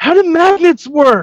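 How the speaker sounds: very high, shrieking scream. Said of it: "Chappie just screaming".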